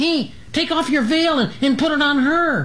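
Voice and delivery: frightened, very high-pitched, scared cry. Reading a story, a character calls out what to do in an emergency, scared voice. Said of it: "Dragonfly's scared voice had called out".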